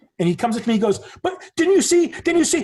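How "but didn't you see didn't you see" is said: very high-pitched, aggrieved, insistent yelling. Retelling how a man came up to him: imitating a man yelling. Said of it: "And he's yelling".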